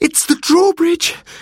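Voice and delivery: very high, high-pitched exclaiming outcry. One of two boys hears an enormous crash and cries out. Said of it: "cried Robert".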